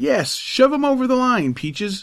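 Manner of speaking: crying out, very high and excited. Watching two boys wrestle in the snow, a lad urges one on, crying out. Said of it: "cried Tom".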